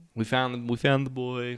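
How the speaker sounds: ordinary talk, nothing marked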